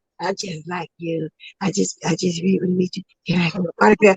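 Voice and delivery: soft, hushed stage whisper. Retelling a man asking another for an autograph: imitating someone half-whispering. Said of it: "Why you whispering?".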